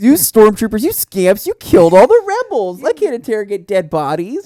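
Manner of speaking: shrill, loud, swooping, sing-song scolding with disappointed tone. Continuing the joke about the villain scolding stormtroopers: Darth Vader as disappointed mother. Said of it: "like a disappointed mother".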